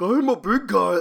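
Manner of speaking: put-on dopey drawl, very slow and loud. Describing a voice actor's adopted affectation: dopey Patrick Star voice. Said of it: "that kind of like Patrick Starr-like affectation where he's like".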